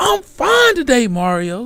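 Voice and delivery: very slow, loud, drawn-out, high-pitched yell. Retelling how a friend would cut in on calls: imitating Crystal yelling. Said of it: "yell out and be like".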